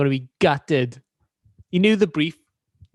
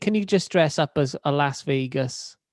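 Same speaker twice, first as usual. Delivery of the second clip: plain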